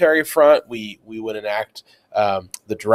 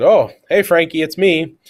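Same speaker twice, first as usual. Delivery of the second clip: casual tone, voice pitched up high; 5 semitones higher than usual. Acting out an imagined phone call between leaders: imitating Churchill. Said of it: "imagine that the phone call went something like this".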